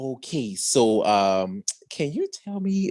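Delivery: slow, hushed whisper under the breath. Retelling a show scene where one character asks another: imitating a whisper. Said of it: "whispering to him".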